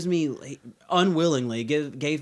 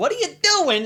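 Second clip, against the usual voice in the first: very high, put-on New York-Midwestern accent; 13 semitones higher, 4 dB louder than usual. Teasing a friend about how he talks: imitating a New York Midwestern accent. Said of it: "a little bit of a Midwestern accent and a fucking New York accent".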